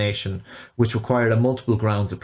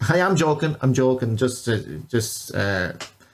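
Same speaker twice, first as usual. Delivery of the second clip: ordinary delivery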